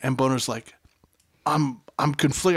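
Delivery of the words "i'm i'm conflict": ordinary talk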